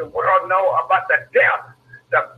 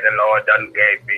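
very low put-on churchy preacher voice; 9 semitones lower than usual. Mocking preachers they can't stand, the speaker imitates them: mock religious preacher voice. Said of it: "with their religious voice".

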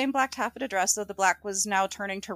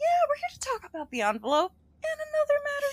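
very high, swooping, overly sweet, friendly voice. Speaker recapping a story quotes Richard, imitating Richard's friendliest voice. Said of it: "in his friendliest voice".

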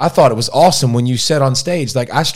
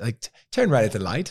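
put-on British accent in a woman's voice; 2 semitones lower, 8 dB quieter than usual. Saying they like the woman British accent, then doing a British woman accent. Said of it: "I like the woman British accent".

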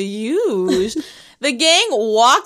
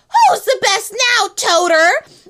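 put-on high-pitched scream; 9 semitones higher, 4 dB louder than usual. Retelling a line as the kids run away: imitating Carly screaming. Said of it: "Carly screams".

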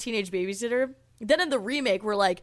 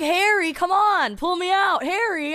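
slow, drawn-out yelling; 7 semitones higher, 4 dB louder than usual. Retelling a movie scene of a man calling to his dog: imitating someone yelling. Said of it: "he's yelling at the dog like it's a human".

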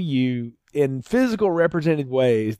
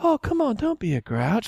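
put-on high-pitched, whimpering, kids-TV style voice; 9 semitones higher than usual. Mocking an actress's line delivery in a film: Shelley Duvall whimpering impression. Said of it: "she's talking like Sesame Street".

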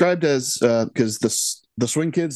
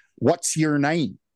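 put-on Southern US accent; 2 semitones higher than usual. Retelling an actor's odd line reading in a film: imitating a Southern accent. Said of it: "is that a Southern accent?".

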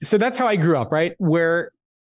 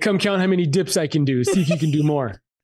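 ordinary talk

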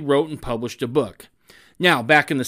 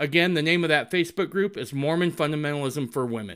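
usual speaking voice

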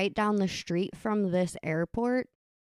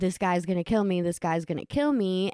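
ordinary talk

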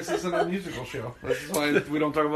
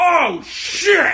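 terrified, freaked-out shriek, very loud and very high; 13 semitones higher, 9 dB louder than usual. Retelling a friend startled by a costumed pirate: imitating a freaked-out yell. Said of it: "she's freaked out like it's fucking Leatherface".

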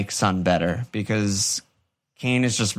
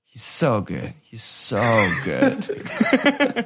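very slow, drawn-out muttering to oneself. Sitting on the couch, retelling how he muttered to himself under his breath. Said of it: "under his breath".

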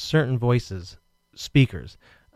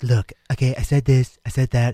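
flat, toneless delivery with no tone. Showing how a politician's speaking voice sounds: half-whispery Donald Trump impression. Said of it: "It's very whispery".

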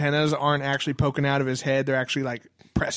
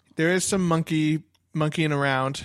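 plain

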